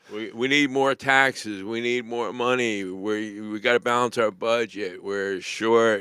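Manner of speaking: ordinary delivery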